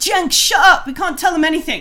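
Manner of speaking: loud high-pitched yelling.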